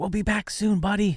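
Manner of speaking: hushed whisper. Saying goodbye to a resting dragon, whispering in its ear: whispering. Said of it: "I'll whisper in Zelefarn's ear".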